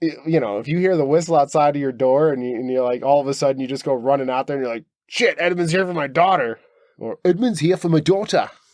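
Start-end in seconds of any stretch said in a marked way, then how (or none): 5.1-8.5 poor, bad, fake put-on British accent. Picturing a parent hearing a whistle outside the door, voicing them in a bad British accent. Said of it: "that was not a good an accent from anywhere on the British Isles".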